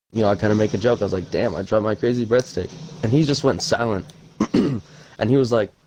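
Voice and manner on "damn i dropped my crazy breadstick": usual speaking voice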